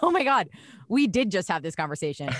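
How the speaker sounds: normal talking voice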